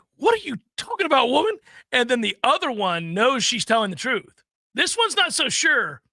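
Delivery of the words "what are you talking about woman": acted-out stunned disbelief, high and baffled. Retelling a kid's reaction to hearing about a player trade: imitating a baffled kid. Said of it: "he's just baffled, absolutely stunned".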